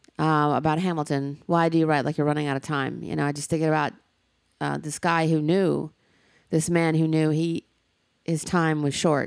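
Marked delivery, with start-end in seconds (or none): none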